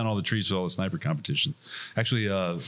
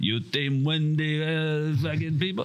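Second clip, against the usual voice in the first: very high, slow, terrible fake Russian accent; 9 semitones higher than usual. Retelling what a man with a foam sword said, terrible russian accent. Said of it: "That's terrible too".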